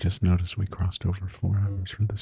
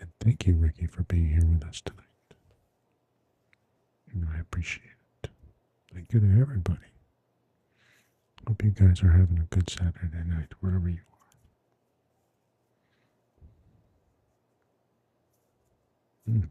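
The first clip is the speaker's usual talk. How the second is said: soft-spoken asmr voice. Thanking viewers on a live asmr stream: soft asmr voice. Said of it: "we just speak in a soft voice".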